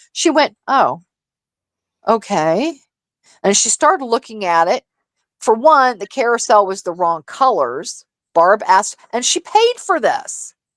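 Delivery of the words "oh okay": disappointed tone. Retelling a gift unboxing: imitating Dusty's disappointed tone. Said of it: "she couldn't help herself 'cause she was disappointed".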